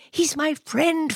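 whispering. Narrator reads a boy answering his father: whispered. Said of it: "father whispered George".

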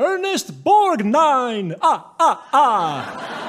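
comic puppet voice with long, stretched ah sounds. A host poses a trivia clue, then gives the answer in the Count Muppet voice. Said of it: "Muppet voice".

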